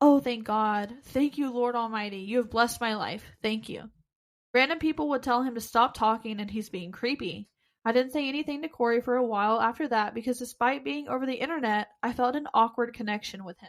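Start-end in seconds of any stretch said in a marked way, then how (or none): 0.0-3.9 put-on much calmer, relieved voice. Retelling a player's reaction during the game: imitating a much calmer voice. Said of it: "goes into a much calmer voice".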